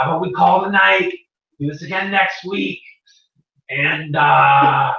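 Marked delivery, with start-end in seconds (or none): 0.0-2.8 goblin character voice. Voicing a goblin who suggests calling it a night: Raz the goblin voice. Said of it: "So Raz the goblin goes".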